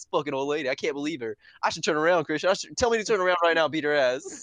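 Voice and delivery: ordinary talk, nothing marked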